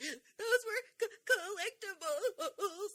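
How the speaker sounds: put-on distraught sobbing, very high and very slow. Retelling a show scene, voicing a distraught woman: imitating someone crying distraught. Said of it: "the woman's crying and screaming and distraught".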